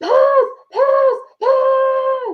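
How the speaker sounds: very high, drawn-out, stretched-out yelling of "pass". Retelling a player running with the ball, yelling.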